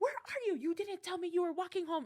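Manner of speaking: acted, very high, rushed, panicked and frantic worry. Retelling a phone call where her mom freaks out: imitating mom freaking out. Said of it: "And she was freaking out".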